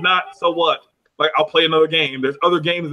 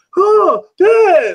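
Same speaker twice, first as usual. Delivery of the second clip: put-on very high, loud upset child crying out; 7 dB louder than usual. A dad retelling his son's reaction when the game is cut off, imitating his son getting mad. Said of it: "he gets mad at me".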